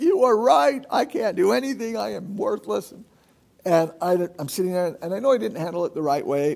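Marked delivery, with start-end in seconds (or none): 0.0-2.9 high, wailing, blubbering, sobbing bawl. A parent acting out wanting to cry after a four-year-old's remark, mock bawling. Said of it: "part of me wants to start bawling".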